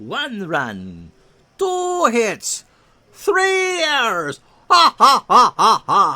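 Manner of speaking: slow booming delivery with a swooping laugh. Counting the Red Sox line score aloud: bad Count von Count impression. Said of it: "That's a bad impression".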